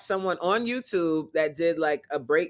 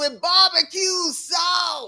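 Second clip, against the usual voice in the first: put-on shrill, very high yell, sauce drawn out; 12 semitones higher, 3 dB louder than usual. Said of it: "Mad loud in the movie".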